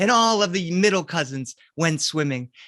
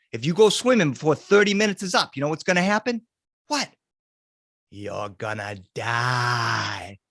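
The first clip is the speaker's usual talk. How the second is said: put-on Boston accent, lower and slower; 6 semitones lower than usual. Retelling a childhood story, voicing his uncle warning the cousins, Boston accent. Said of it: "so he has a Boston accent".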